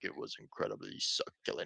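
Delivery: low, whispered imitation of a man's voice. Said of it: "he actually just talks like that".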